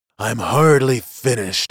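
ordinary talk

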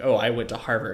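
normal talking voice

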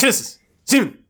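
fast, slightly high, both words rushed together. Speaker demonstrates to the co-host, saying both words really fast. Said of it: "if you say both really fast".

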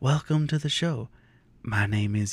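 mock nice, gentle, slow, calm soothing delivery. Describing how a show's host opens, imitate his nice calming voice. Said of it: "this really nice calming voice".

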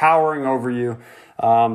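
ordinary delivery, nothing marked

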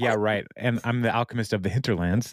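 usual speaking voice

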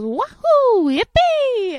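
very high, loud cheer with a big swooping pitch. Retelling the voice actor shouting in his Mario voice at a convention. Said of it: "I'll be Mario for free".

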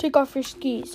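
ordinary talk, nothing marked

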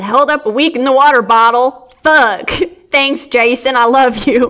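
reading aloud in a put-on country accent. Reading aloud text from a slide, in a country accent. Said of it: "I had to read it in a country accent".

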